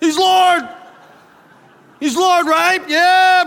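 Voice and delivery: exuberant, very high, loud shouting.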